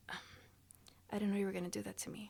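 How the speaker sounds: soft, fast whisper, brought all the way down. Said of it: "you gotta basically whisper it".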